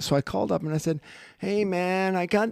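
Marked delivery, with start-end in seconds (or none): 1.4-2.5 very slow, drawn-out hippie voice. Speaker retelling calling a late-night radio show, playing a hippie on the phone. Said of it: "I played played it like a hippie".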